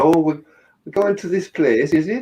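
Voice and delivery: exaggerated mock Welsh accent. Describing how a man does not talk, exaggerated Welsh accent. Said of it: "He doesn't sort of go".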